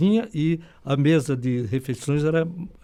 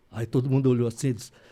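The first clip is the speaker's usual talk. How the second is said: usual speaking voice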